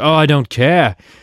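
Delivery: put-on accent gradually sliding toward Australian. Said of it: "Was that Australian? Was that better?".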